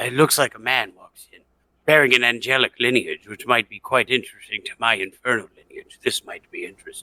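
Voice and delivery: soft mutter under the breath. Voicing a character who mutters about someone who walked in: muttering under breath. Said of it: "under my breath".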